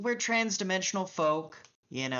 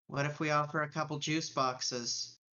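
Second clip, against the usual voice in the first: flat, dry, expressionless deadpan; 3 semitones lower, 3 dB quieter than usual. Speaking as a bug man through the comm screen to him, deadpan. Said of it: "with the most deadpan look a bug man can fucking muster".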